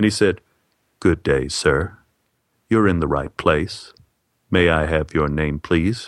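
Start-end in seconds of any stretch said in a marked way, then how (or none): 1.0-6.1 deep, solemn funeral-director baritone voice. Retelling a hospital desk man's check-in greeting: imitating soft baritone voice. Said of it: "his soft baritone voice".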